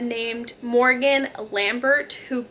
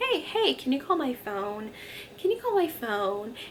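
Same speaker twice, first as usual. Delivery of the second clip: soft, parrot-like talking voice; 7 dB quieter than usual. Speaker retells a voice heard from the other side of the door, parrot-like. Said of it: "It almost sounds like a parrot talking".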